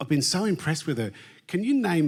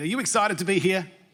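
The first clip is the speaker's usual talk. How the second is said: more enthusiastic, hyped-up delivery. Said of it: "You don't sound that excited".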